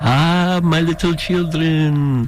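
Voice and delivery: slow, drawn-out drawl in a Romanian accent. Between radio calendar announcements, the speaker slips into a Dracula-style Romanian accent. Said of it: "I feel like talking in a Romanian accent and saying".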